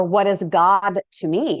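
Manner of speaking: ordinary talk, nothing marked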